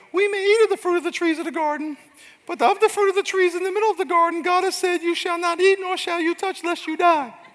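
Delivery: very high-pitched, nasty woman's voice. Reading the woman's reply to the serpent aloud, in a nasty woman voice. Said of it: "That's a nasty woman voice".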